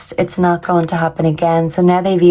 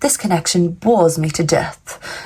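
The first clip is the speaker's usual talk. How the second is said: snooty, snobbish, upper-crust English accent; 3 dB quieter than usual. Reading out a quoted line, the speaker tries it in a posh, snobby english accent. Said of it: "I thought of like a posh snob um, English accent".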